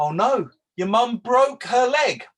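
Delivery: loud, strongly stressed, emphatic, rising voice. Teacher modeling a reply to an imaginary student: loud and emphatic. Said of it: "said louder and emphatically".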